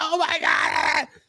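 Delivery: very high, shrieking, screaming cry. Imagining running from a bear on camera: pretend screaming. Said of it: "I'm screaming".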